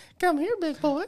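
creepy voice, pitched very high. Showing off a voice they can do too well: Herbert the Pervert voice. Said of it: "I don't like how I can do that voice very well".

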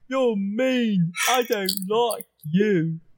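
simple ogre character voice. In a role-playing game, Uru the ogre answers a player, Uru the ogre voice. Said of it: "It's an ogre. ... And he smells really bad".

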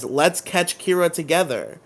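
ordinary talk, nothing marked

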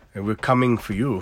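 bad put-on Belgian accent. Quoting a line read with no inflection; bad belgian accent. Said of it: "I can't do a Belgian accent".

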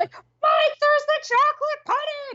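acted-out, very high, shouted voice. Retelling a scene where Dustin yelled: imitating Dustin yelling. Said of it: "Dustin yelled".

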